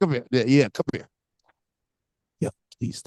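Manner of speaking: put-on whisper, quiet. Retelling someone pulling the speaker aside, imitating someone quietly whispering. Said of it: "quietly whispering that to you".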